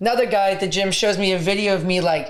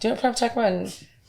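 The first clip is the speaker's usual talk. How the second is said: normal talking voice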